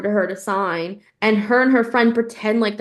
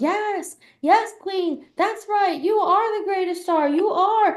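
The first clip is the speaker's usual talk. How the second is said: put-on high screamed fan-like cheering; 11 semitones higher than usual. Retelling an audience member at a Broadway show: imitating someone screaming. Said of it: "You were screaming out during a Broadway show".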